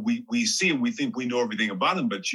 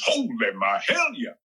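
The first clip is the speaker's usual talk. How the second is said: mock full-energy, fired-up, energetic delivery. Retelling being told how to say a line, he performs it: acted-out energetic delivery. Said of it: "say it with energy. And he wants me to do this".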